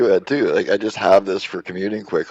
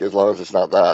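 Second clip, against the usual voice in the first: mock snide tone with total attitude. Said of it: "total attitude for the Tesla".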